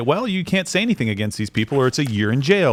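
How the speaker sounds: plain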